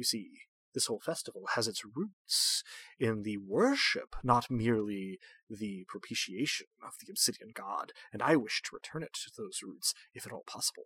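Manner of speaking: soft, posh, formal voice. Voicing the hermit addressing the players in an actual-play game: Brother Umber, posh hermit voice. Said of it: "Character I described last time as a posh hermit, / Character I described last time as a posh hermit, so with it wearing a, you know, sort of loose-fitting, monocolored robe without really anything in".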